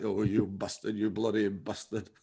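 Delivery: put-on accent from northern England. Recalling how they voiced the devil: [name]'s Northern English accent. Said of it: "I tried to do the devil with like North English accent".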